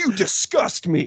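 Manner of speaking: mocking, disgusted teen boy voice, high, sneering, drawn out. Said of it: "He's like".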